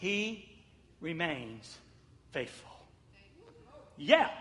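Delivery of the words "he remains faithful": soft, low, one word at a time with pauses. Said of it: "watch this, watch this".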